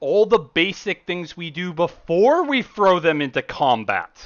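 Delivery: very high, very loud, drawn-out furious shout. An overheard voice berates someone just before silence falls, very, very loud. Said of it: "She's a tall, muscular woman with blonde hair, shaved on the sides with a long braid in the back. She wears a special forces outfit, / She's a tall, muscular woman with blonde hair, shaved on the side".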